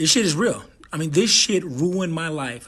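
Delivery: fighting back tears, on the edge of crying. Speaking right after saying to try not to cry: holding back tears. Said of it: "try not to cry now".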